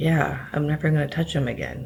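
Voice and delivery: almost monotone, level, flat voice. Retelling a mother's answer to a reporter, imitating her flat monotone. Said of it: "like almost monotone".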